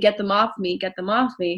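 normal talking voice

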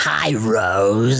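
goofy, creepy put-on demon voice. Describing how she greets someone, goofy, creepy demon voice. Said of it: "it's like a goofy, weird, creepy voice".

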